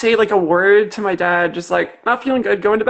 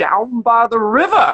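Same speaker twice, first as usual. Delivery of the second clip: put-on Southern pulpit preacher delivery. Recalling how they answered their dad's question, in a Southern preacher voice. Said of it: "adopted this like voice of a Southern preacher".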